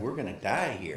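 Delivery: ordinary talk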